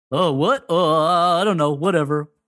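mock careless, clueless, offhand, oblivious voice. Imitating the movie as if it were oblivious: mock oblivious voice. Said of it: "perfect, uh, imitation of the movie".

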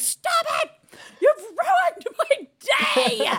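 very high, very slow, upset, wounded meltdown. Retelling a teen's reaction to a morning greeting: imitating an upset teen outburst. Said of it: "great upsetness over something that is not even a thing".

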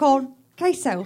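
put-on Houston, Texas accent. Saying food words in a Houston accent. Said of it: "that's the Houston accent".

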